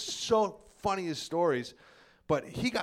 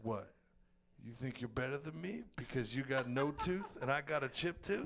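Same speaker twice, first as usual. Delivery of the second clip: put-on drunk voice, lower and quieter; 3 semitones lower, 8 dB quieter than usual. Retelling a brother's drunk challenge at a party: imitating drunk Joe. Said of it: "my brother is so fucking drunk, he goes".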